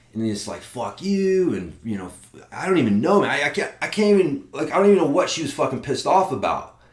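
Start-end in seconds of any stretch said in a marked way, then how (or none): 0.7-1.6 put-on, half-hearted, pitched-up mild yell. Retelling the curse the lady screamed at the speaker: imitating a woman screaming. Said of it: "she is fucking screaming at me".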